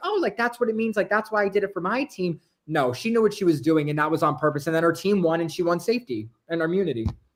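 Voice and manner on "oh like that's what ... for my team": put-on innocent tone, much higher pitch. Retelling how a competitor justified her move to her team, mock-innocent, not malicious. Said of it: "she didn't act like it was malicious".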